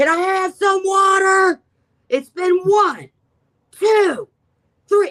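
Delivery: acted, very high, loud top-of-the-lungs scream. Locked alone in a room, speaker retells counting aloud, screaming at the top of lungs. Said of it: "screaming at the top of my lungs".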